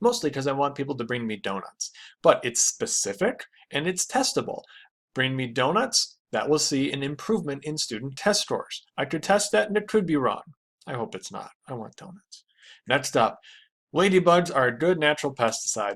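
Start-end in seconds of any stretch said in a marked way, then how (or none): 10.9-12.4 very quiet, hushed aside under the breath. Speaker going through example hypotheses, adding a personal aside: quiet.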